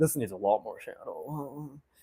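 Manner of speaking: deep, low, very hushed manly voice. Working on shading after noticing their voice went nasal, in a manly voice. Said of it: "Now I sound like a man".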